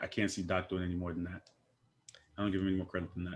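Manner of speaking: soft, quiet voice. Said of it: "hit us with the soft voice again".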